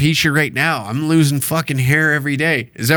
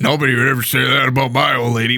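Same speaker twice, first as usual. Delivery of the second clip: mocking, imitated macho tough-guy bravado voice; 3 semitones lower than usual. Mocking people who defend a man's honor: mocking tough-guy voice. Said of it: "acting like you're the toughest man".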